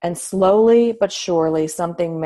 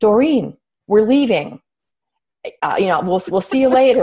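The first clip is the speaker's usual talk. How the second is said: mock jokey, funny, theatrical, dramatic delivery; 4 semitones higher, 4 dB louder than usual. Retelling the husband announcing to the mother they are leaving: imitating a funny dramatic delivery. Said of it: "in a funny, dramatic way said".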